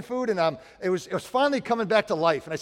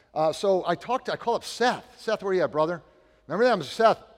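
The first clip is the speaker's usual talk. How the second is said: ordinary talk, nothing marked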